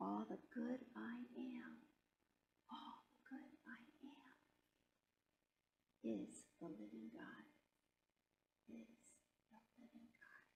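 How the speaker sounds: soft, quiet whispering. Leading listeners to whisper affirmations to themselves: whispering quietly. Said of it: "whisper these words to yourself".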